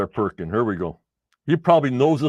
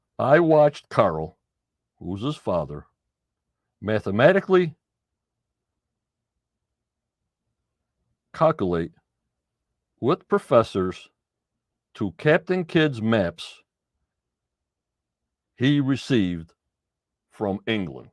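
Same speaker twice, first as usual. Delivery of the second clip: very slow delivery. Reading aloud to listeners a passage written by a man's son, said real slow. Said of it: "I'm going to say it real slow".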